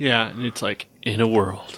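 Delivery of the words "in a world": low movie trailer announcer voice. Imitating the movie trailer guy for another speaker: movie trailer guy voice. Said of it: "the movie trailer guy?".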